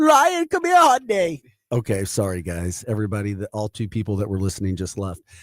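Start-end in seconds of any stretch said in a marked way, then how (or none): 0.0-1.4 very high, loud, put-on Colombian accent. Demonstrating how they want their AI voice to sound, in an attempted Colombian accent. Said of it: "I couldn't get my Colombian in there".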